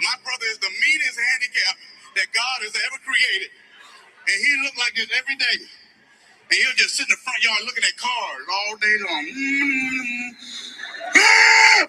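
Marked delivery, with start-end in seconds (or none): 11.2-11.9 mock, very high, sudden, loud shriek. Imitating a brother screaming from the front yard: imitating brother's scream. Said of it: "He screamed at me like that".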